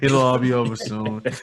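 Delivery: put-on mopey, gloomy voice. Repeating how the other speaker phrased it: mock gloomy Eeyore tone.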